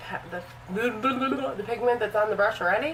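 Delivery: rushed, very fast, rattled off.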